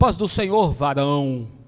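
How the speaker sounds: affected self-important voice. Explaining a joke about a spirit-meter for religious speech: affected, put-on formal voice. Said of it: "Se falar com voz impostada".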